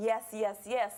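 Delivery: normal talking voice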